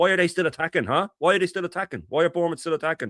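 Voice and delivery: high, bitter sarcasm. Recounting what she said to him during the game, retelling bitter sarcastic remark. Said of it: "she bitterly said to me".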